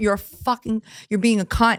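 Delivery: unhinged, angry, raging rant. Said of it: "totally psycho in the chat".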